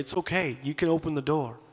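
whispered godlike voice. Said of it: "the Spirit of God's whispering and saying".

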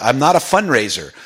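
plain

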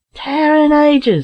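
high, astonished, amazed cry. Reading Larry on seeing Bill Jones, crying out in amazement. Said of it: "cried Larry in amazement".

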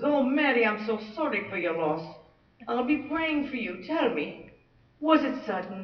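put-on Irish accent. Telling a joke, voicing the pastor consoling a widow, Irish accent. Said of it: "so I have to have an Irish accent".

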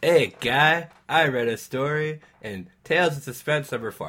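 loud, failed attempt at a Canadian accent. Joking about a canadian crime story, then switching topics: attempted canadian accent. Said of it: "I can't do Canadian voice".

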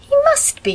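disbelieving, incredulous, pitched very high. Narrator reading one girl answering another about a cat, incredulous. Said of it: "said Phil incredulously".

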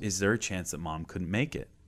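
mock teary, worried, hesitant delivery. Retelling a son's scared question in the car: imitating a tearful, scared son. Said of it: "he just starts tearing up".

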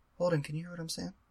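very softly spoken, really quiet. Checking from ten feet away whether someone can hear, real quiet. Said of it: "Like, real quiet".

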